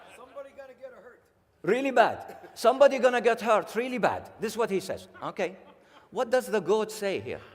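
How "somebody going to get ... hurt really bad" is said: put-on Indian accent, raised and high. Asked to say a comedian's biggest line: Indian accent. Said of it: "in an Indian accent".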